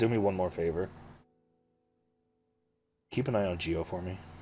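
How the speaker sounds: hushed whisper. Narrator voicing a character who leans in a little closer: whispering. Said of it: "she leans in a little bit closer and whispers".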